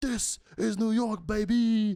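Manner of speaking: very high, loud, full-tilt screaming. Retelling a man screaming at the speaker about Penn Station, imitating someone screaming. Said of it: "He's like screaming at me".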